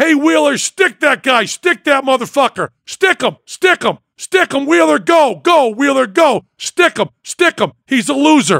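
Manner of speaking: acted, rowdy sports-fan hollering, high and full-throated. At a fencing club, speaker retells cheering on a fencer, retelling yelling at top of lungs. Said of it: "at the top of my lungs".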